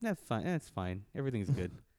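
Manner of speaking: hollow, unconvincing insistence with no conviction. Insisting to another speaker that everything is fine: unconvincing reassurance. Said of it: "Say that with less conviction".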